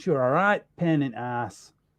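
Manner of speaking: put-on northern man's voice and accent. Recalling a man on the set of Hook, the speaker uses a northern man's voice. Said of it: "He said it like that as well. Like a northern man".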